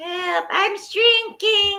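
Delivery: very high, shrill storybook witch voice. Offering to do a voice, then performing it, Wicked Witch voice. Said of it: "I could do the Wicked Witch's voice".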